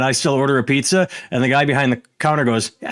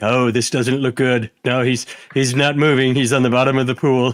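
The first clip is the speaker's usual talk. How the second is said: deadpan, flat monotone sports commentator drone. Retelling a video where a commentator calls a swimmer sinking: imitating a monotone commentator. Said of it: "They just complete monotone as they say it".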